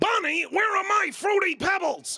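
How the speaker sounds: very high, shouting, hollering cartoon caveman voice. Doing a couple of character voices for the audience: Fred Flintstone voice.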